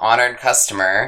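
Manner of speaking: ordinary talk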